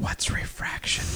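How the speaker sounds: loud, breathy whisper meant to carry. Retelling what a guy in the theater asked his buddy: imitating a loud whisper. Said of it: "loudly whispers".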